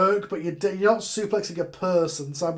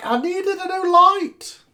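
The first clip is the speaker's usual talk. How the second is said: put-on shrill, very high, very slow old woman yell; 13 semitones higher, 6 dB louder than usual. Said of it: "the old woman's gonna yell back".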